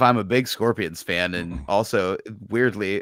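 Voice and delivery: ordinary talk, nothing marked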